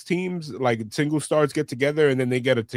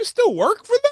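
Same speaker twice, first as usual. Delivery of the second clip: very high, loud, drawn-out jeering taunt; 5 dB louder than usual. Retelling how people laugh at the speaker: imitating someone laughing mockingly. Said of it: "laughing at me".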